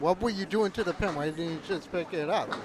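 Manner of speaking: plain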